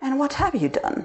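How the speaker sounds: muttering under the breath. The narrator answers the other speaker, muttering, though already knowing. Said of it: "I muttered".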